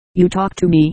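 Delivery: ordinary delivery, nothing marked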